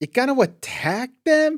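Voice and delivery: loud, swooping Rhode Island accent in a cartoon voice. Trading Rhode Island accents, the speaker does a Peter Griffin voice. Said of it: "That's how you sound".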